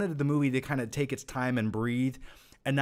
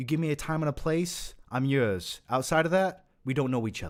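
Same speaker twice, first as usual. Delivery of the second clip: put-on Boston accent. Calling himself a logistical expert and quoting a movie line, Boston accent. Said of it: "Don't ask why I did a Boston accent".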